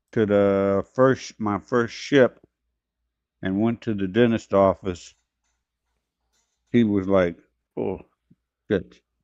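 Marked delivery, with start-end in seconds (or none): 7.8-9.1 hushed whisper under the breath. Retelling what the dentist said on seeing the teeth: imitating a mutter under breath. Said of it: "kinda under his breath".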